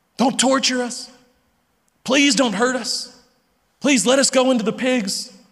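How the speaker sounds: meek, groveling, submissive pleading tone. Speaker acts out the demons begging Jesus, in mock submissive begging. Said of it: "their submissive attitude and spirit and tone".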